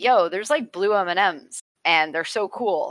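usual speaking voice

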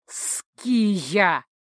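name said with a growl. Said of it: "прорычал Эйнард".

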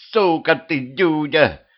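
high yelled shout with name stretched long. The ruler lunges at a man who warned the crowd, shouting. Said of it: "закричала повелительница".

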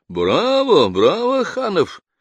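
very high, swooping, sing-song, derisive and mocking. Narrator voicing front-row actors applauding a performer; mocking. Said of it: "с насмешкой хлопнули они в ладоши".

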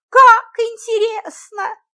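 very high-pitched, thrilled, delighted cry. Miss Friedlander hears the town has a museum and reacts, delighted. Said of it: "Тут же восхитилась".

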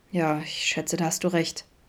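low, murmured voice. One character replies to another's question, murmured. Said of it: "murmelte Adam".

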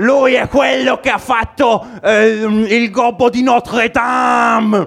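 shouted voice, high and slow.

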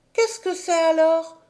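eager, high, cried-out exclaiming voice. Narrating, a girl turning every way to see asks her question: crying out. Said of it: "s'écria Heidi".

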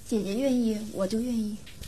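put-on small, soft kid voice.

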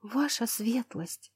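soft, quavering, trembling crying voice. A maid addressing her lady, speaking in a trembling voice. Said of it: "дрожащим голосом повторила она".

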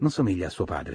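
ordinary delivery

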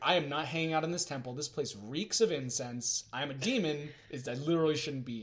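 usual speaking voice

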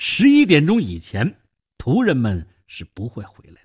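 ordinary delivery

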